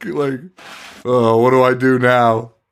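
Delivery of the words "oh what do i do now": play-acted gloomy, sad, mopey lamenting voice. Retelling a movie scene, doing the coach's lines: imitating a sad, mopey man. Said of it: "he's sadder than Alan about the whole fucking thing".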